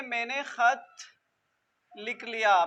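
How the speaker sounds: ordinary delivery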